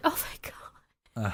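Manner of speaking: hushed whisper with audible relief.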